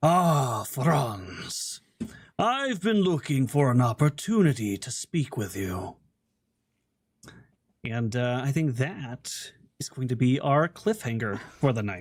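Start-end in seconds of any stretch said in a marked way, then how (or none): 0.0-6.0 rough-edged, gruff voice. Narrator voicing a stranger stepping up behind, speaking to franz, in a gruff voice. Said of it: "you hear a gruff voice say".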